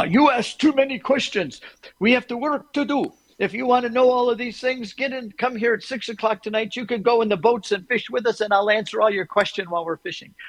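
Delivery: put-on thick Hebrew accent, pitched high.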